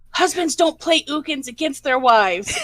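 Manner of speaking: toned-down, blurted-out mild scream. Retelling playing against her husband in a game: imitating own scream. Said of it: "I just screamed out".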